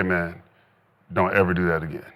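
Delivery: acted whispering. Retelling a warning to a rookie teammate on the sideline: retelling a whisper. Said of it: "I whispered in his ear".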